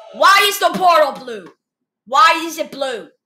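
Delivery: very loud, jeering, mocking yelled shout. Reacting to the Minecraft movie trailer and making fun of it, yelling at the trailer. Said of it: "I'm just yelling at the trailer, making fun of it".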